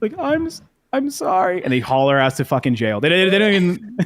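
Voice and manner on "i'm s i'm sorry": tearful, weepy voice, very high and drawn out. Retelling a TV scene where a lady finally apologizes: imitating a tearful apology. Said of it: "the lady's in fucking tears".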